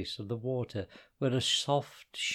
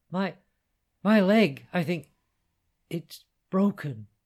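pained gasp, high and slow; 5 semitones higher, 7 dB louder than usual. Hudeifa, lying still where he had fallen, answers Hannah, gasping. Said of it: "he gasped".

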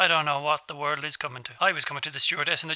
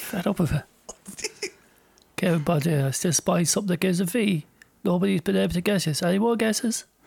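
put-on Irish footballer voice, higher-pitched; 3 semitones higher than usual. Playing I Spy at a party in character: Roy Keane voice. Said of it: "this is what he sounds like".

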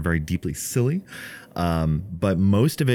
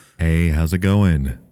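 macho action-hero voice, louder; 5 dB louder than usual. Greeting listeners at the start of a podcast episode: almost Duke Nukem-esque voice. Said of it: "That sounded like almost Duke Nukem esque".

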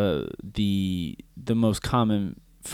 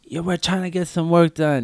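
yelling male voice, higher; 8 semitones higher than usual. Retelling how a guy yelled through the open window: imitating a guy yelling. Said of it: "I hear this guy yelling".

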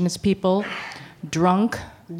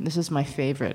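low, dry, deadpan sarcastic delivery; 4 semitones lower, 6 dB quieter than usual. Recalling racist paperwork she once faced, the speaker introduces it, sarcastic. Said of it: "and I'm being sarcastic".

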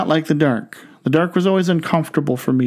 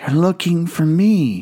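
put-on whispering child voice. Telling a joke, voicing a four-year-old on the phone: imitating a child whispering. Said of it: "whispered Jimmy".

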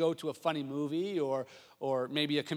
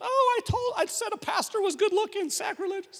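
put-on very high-pitched, flustered, embarrassed exclamation; 6 dB louder than usual. Retelling the friend's words after calling the pastor good-looking, imitating an embarrassed person. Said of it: "her friend was so embarrassed".

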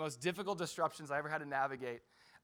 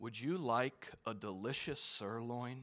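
slow, savoring commercial voiceover; 5 semitones lower than usual. Retelling an ad cutting into the music during communion: imitating a Longhorn Steakhouse ad. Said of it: "Longhorn Steakhouse ad".

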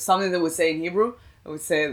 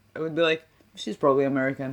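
ordinary delivery

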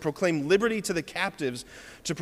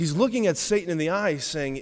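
usual speaking voice

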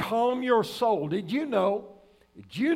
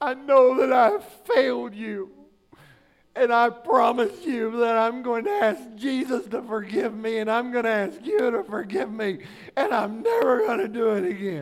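put-on blubbering through tears, weepy. Recalling how a child took his spanking, imitating Jonathan weeping. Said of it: "he'd just weep and cry".

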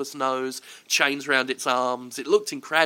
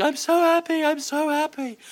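put-on very high, weepy, drawn-out sobbing voice; 14 semitones higher than usual. Retelling how she burst into tears at a photo: imitating someone crying. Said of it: "she's crying and going".

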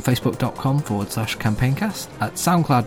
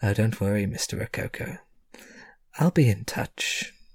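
rather condescending, patronizing tone, talking down; 2 semitones lower, 4 dB quieter than usual. Game master voicing a woman taking leave of the player's character, condescending. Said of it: "rather condescendingly and says".

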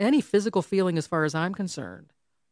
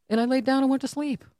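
normal talking voice

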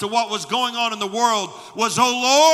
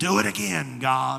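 put-on low, slow, raspy old-man voice; 8 semitones lower, 5 dB quieter than usual. Retelling how a preacher on a cassette tape would pause mid-story, old raspy voice. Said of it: "with that old raspy voice".

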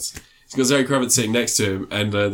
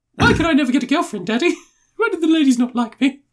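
put-on very high, raised, spoiled posh rich boy voice; 5 dB louder than usual. Mocking a rich kid who asks his daddy why he's picked on: imitating a posh kid.

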